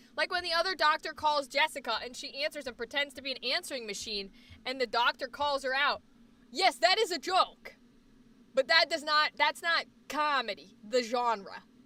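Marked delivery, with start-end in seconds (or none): 8.5-11.6 Boston vowels creeping in, slipping into Boston accent. Arguing about whether a TV show counts as comedy, in a Boston accent. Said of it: "I don't know why I have a Boston accent right now".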